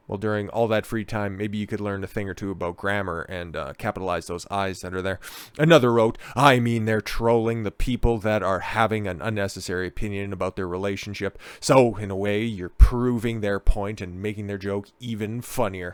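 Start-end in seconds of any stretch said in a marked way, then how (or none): none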